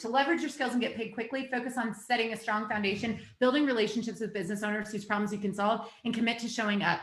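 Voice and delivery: fast, rushed, rattled-off delivery. Speaker giving advice to an online audience, speeding up: talking faster. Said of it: "I got to start talking faster".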